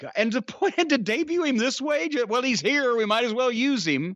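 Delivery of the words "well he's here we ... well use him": usual speaking voice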